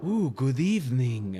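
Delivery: put-on Transylvanian accent with a lisp. Describing a narrator voice they developed: Dracula voice with Spanish lisp. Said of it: "the narrator was like a a Mexican Dracula".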